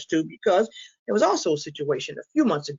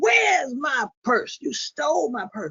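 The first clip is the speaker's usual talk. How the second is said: high, slow, screaming shout. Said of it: "my mother started screaming".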